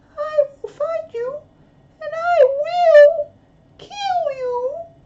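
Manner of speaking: highest possible top-of-range pitch, very slow. Repeating the line once more, pushing the voice as high as possible. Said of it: "That's as high as I can go".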